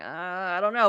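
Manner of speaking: put-on wavering, reluctant, very hesitant uncertainty. Acting out a character's hesitant reply to another speaker: imitating a hesitant character. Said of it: "very hesitant".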